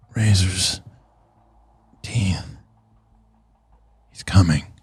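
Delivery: low, quiet mumbling under the breath. Game narrator voicing a character huddled in a corner, muttering to himself. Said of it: "looking down and like muttering".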